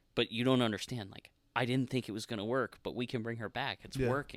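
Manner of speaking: normal talking voice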